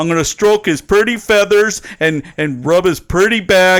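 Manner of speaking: big cartoon monster character voice. Retelling a cartoon scene, quoting the monster: abominable snowman voice. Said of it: "the abominable snowman grabs Daffy Duck and goes".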